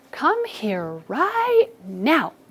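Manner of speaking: mildly cross, upset call with swooping pitch. Calling a dog back from the neighbor's yard, sounding a little bit upset. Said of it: "like I'm a little bit upset with".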